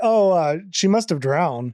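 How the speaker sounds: mock casual, flat offhand tone, no emotion. Quoting a character reporting a drowning: imitating a nonchalant tone. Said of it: "he said it so nonchalantly".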